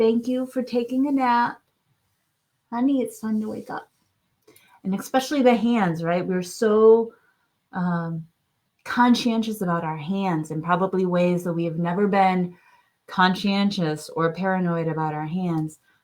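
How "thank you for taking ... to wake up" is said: tender, gentle, loving, soothing coaxing voice. Speaker shows how they gently wake their own arm: loving, soothing voice. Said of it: "in a very loving, soothing voice".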